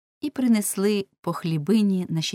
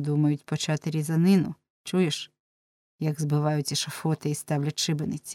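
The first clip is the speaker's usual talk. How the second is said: ordinary delivery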